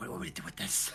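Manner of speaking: hushed whisper. Speaking a line in the scene after passing a crossbow, whispered. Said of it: "I'll whisper like".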